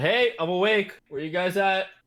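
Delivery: loud, high shout, calling out across distance. Calling out to the group at the pit after waking up, shouting. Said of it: "Why is he shouting?".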